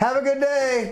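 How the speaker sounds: shrill, passive-aggressive delivery. Retelling what the speaker says to people who annoy them: an aggressive 'have a good day'. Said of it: "those have you good have a good days were getting a little bit more aggressive".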